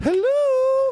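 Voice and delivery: put-on, very high, squeezed falsetto woman voice. For a comedy bit, speaker does the Tootsie woman: Tootsie woman voice. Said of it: "I have to do the Tootsie woman".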